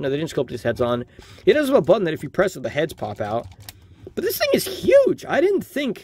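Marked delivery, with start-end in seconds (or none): 4.1-6.0 voice suddenly shooting up high. Looking at a figure much bigger than expected: voice going high. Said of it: "My voice went kind of high there".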